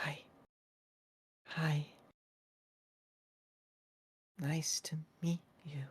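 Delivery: soft, high, gentle, soft-spoken voice. Narrating a scene, a disembodied voice greets a terrified kid in a soft voice. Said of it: "filled with the soft voice of".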